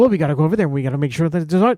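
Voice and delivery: rushed, fast delivery like dubbed anime. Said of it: "talk really fast and have no".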